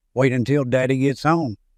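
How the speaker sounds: ordinary delivery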